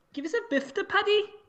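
put-on Scouse Liverpool accent. Doing the second in a run of accents for a co-host, a Scouse accent. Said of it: "A Scouse accent, Paddy".

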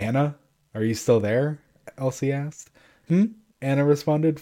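ordinary delivery

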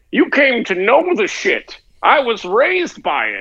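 put-on booming, swooping, high comic-book villain voice, no growl. Parodying movie villain lines, the speaker answers a request with a Bane voice. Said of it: "Now you gotta say it like Bane".

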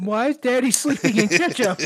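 put-on very high, loud little-kid voice. Imagining what listeners would hear next: imitating a kid's voice. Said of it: "Just hear a kid go".

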